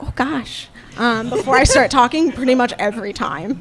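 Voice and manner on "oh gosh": very quiet mutter under the breath. Retelling what a housemate hears before speaking: imitating a quiet under-breath mutter. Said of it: "very quietly under my breath go".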